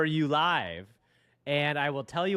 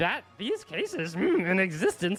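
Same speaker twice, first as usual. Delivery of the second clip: put-on little old master voice. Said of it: "get my Yoda voice on".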